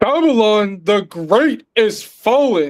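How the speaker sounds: slow, fervent, enthusiastic preacher-style delivery. Rereading a Bible verse after being asked for more: with bass and enthusiasm. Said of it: "read it with some bass and some".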